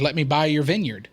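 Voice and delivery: ordinary talk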